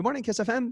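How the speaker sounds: high-pitched radio voice. Answering the ringing Kiss FM phone line, in a higher-pitched voice. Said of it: "It's like higher".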